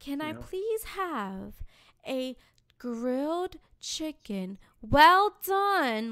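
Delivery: loud, very slow, word-by-word spelled-out enunciation. Retelling ordering food, speaker says it slowly for the server. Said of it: "Can I say it slowly for him?".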